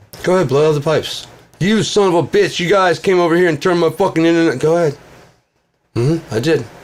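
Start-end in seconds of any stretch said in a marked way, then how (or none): 1.6-4.6 furious, angry shouting, higher and louder. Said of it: "you're yelling at Bill South".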